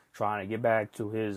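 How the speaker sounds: ordinary talk, nothing marked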